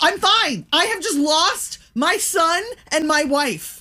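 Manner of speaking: high, slow panicked yell. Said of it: "I hear my husband yell".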